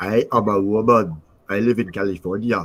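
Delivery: slow, drawn-out, put-on Austrian accent. Teasing seventy-nine about how she sounds, in a mocking Arnold Schwarzenegger voice. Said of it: "That's what seventy-nine sounds like".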